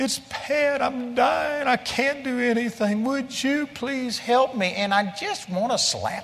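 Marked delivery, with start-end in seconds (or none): 0.0-4.7 put-on tearful, cracking voice, pitched up. Retelling how people relay their doctor's news to the speaker, imitating a teary, breaking voice. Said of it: "they'll be in a teary voice and their voice breaking like".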